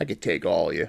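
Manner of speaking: low, quiet, sneering, taunting tone under the breath. Retelling what the big guy said to everyone watching him, retelling a sneer. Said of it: "he just sneers and go".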